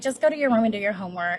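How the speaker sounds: put-on tired, weary parent voice. Describing parents who come home super tired, the speaker imitates a tired parent. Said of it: "they were super tired".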